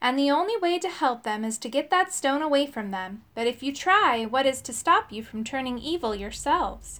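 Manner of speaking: usual speaking voice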